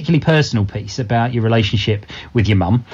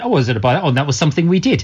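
plain

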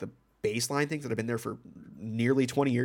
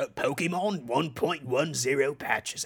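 unhurried put-on British video-host voice; 2 semitones higher than usual. Quoting a YouTube alert from a British YouTuber: impression of a British YouTuber. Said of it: "this is my impression of him".

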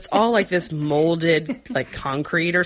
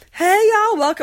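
very high, loud, friendly put-on Southern accent; 6 dB louder than usual. Retelling how the friendly nurse at the desk greets people, in a Southern accent. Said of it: "I'm also going to do some Southern accents".

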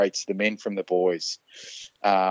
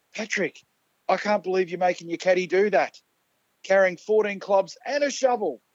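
very high, shrill, high-pitched heckling shout; 10 semitones higher than usual. Speaker retelling what someone in the crowd yelled at patrick, imitating a heckler yelling. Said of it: "someone from the crowd has yelled out".

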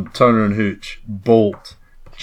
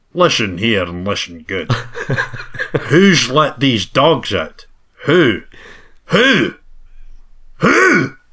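slow, drawn-out, swooping Scottish accent; 3 semitones higher than usual. Asked to say the line more Scottish: Sean Connery voice. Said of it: "did the call and response as Sean Connery".

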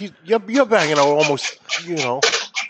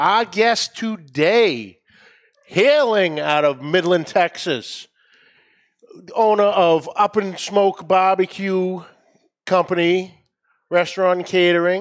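boxing ring announcer style with rising build-up; 3 semitones higher than usual. Introducing the show's guest by name and titles: boxing match intro. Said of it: "like a boxing match intro right there".

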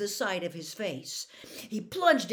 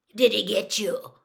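raised, low, gravelly growl; 5 dB louder than usual. Narrating a story, voice Moody asking Harry, in a low gravelly growl. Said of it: "Moody growled. His voice was low and gravelly".

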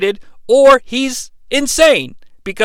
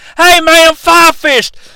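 put-on very high, loud, squeaky kid voice; 9 semitones higher, 7 dB louder than usual. Describing the little fat kid from Deadpool Two: imitating Fire Fist. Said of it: "the little fat kid who's like".

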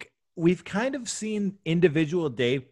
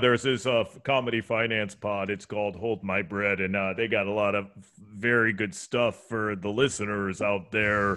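cowboy voice, lower, quieter; 8 semitones lower, 4 dB quieter than usual. Guest answering the host's question about sources, cowboy voice. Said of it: "you sound like a cowboy".

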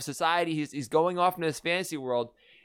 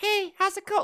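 put-on child's voice, much higher. Discussing a movie, mimicking how an actor put on a child's voice. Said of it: "he actually is like putting on this child's voice".

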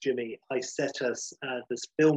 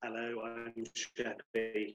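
robotic machine voice, quieter; 2 semitones lower, 13 dB quieter than usual. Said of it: "You sounded like, honestly, Terminator".

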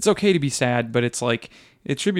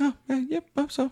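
very high, murmured, hushed half-whisper; 13 semitones higher, 5 dB quieter than usual. Mocking a movie character who half-whispers everything: half-whispering Newt Scamander impression. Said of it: "he whispers everything".

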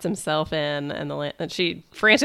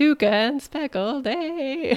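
put-on breaking voice, higher pitch; 10 semitones higher than usual. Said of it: "Voice breaking all time".

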